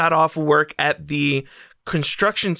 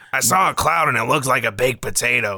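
nasal, put-on character voice; 3 semitones lower than usual. Recreating a character's voice for the group, the speaker tries it, nasal Scrawn-like voice. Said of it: "I think it was a little more nasally".

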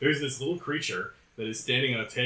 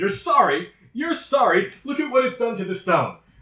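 shrill, very high, very loud repeated outburst; 12 semitones higher, 9 dB louder than usual. Voicing Traxigor, an otter in a suit coat, scolding someone: voicing Traxigor the otter. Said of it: "And he says".

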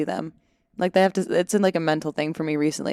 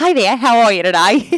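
aggressive, loud, exaggerated, over-the-top put-on Australian accent; 4 semitones higher, 7 dB louder than usual. Retelling his third audition take, doing an aggressive over-the-top australian accent. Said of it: "I just went in aggressive Australian".

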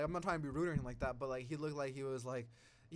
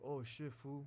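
deep, low exclamation in a big guy's voice; 8 dB quieter than usual. Recalling a training buddy, imitating his deep voice. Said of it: "he had, like, a deep voice".

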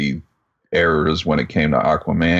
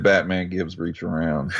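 usual speaking voice

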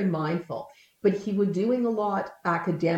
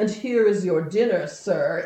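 put-on playful, showy, facetious, theatrical stagey delivery. Retelling playfully serving someone dinner: retelling own facetious theatrical tone. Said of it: "in a very facetious and very kind of, like, theatrical way".

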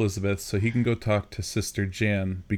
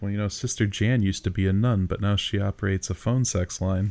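plain

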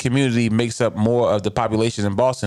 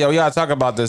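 ordinary talk

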